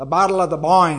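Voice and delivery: put-on Northern Irish accent. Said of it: "That's Northern Ireland accent".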